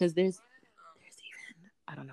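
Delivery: whispering. Discussing Zoom tutorials in conversation, the speaker notices they are whispering. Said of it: "I'm whispering".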